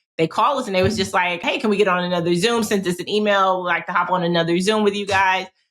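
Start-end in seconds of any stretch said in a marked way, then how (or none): none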